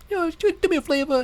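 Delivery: put-on lisping voice, pitched very high. Mocking a game character who says words wrong: Tiny Tina impression with fake lisp. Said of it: "Tiny Tina".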